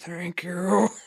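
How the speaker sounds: put-on undead zombie monster voice. Voicing a character who keeps dying and coming back, zombie voice. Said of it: "In his zombie tone".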